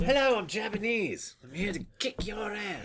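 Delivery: put-on dubbed-movie English accent. Mocking movie characters dubbed with English accents, in an English accent. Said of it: "then they have people with English accents".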